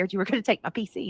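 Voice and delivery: ordinary delivery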